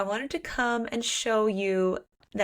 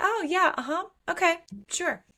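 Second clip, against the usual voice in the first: put-on forced-casual tone, pitched up; 9 semitones higher than usual. Retelling how a character acts fine when he leaves: imitating forced casualness. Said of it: "she tries to act like she's fine with it".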